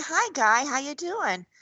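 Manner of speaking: adorable, tiny, cute small voice. Describing a school resource officer's greeting, imitating her little voice. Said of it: "Little voice and she's like adorable".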